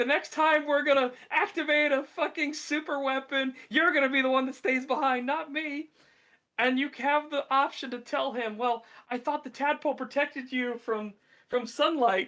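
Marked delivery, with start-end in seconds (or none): 0.0-5.9 high-pitched, freaked-out ranting outburst. Retelling a game scene where a character turns on the player, mock Withers screaming. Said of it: "starts screaming at you like".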